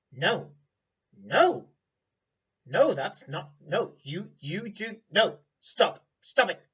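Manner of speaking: high, loud little sprite voice. Narrator voicing the listener's familiar as they touch a dagger, in a little sprite voice. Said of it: "your familiar, and she says".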